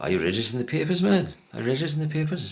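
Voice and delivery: put-on Welsh accent. Quoting the man he is describing, in a Welsh accent. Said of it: "When I'm doing the accent".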